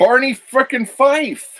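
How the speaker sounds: very high-pitched, shrill, incredulous yelling outburst. Answering another speaker who doesn't know an actor: shouting. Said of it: "Why are you shouting at me?".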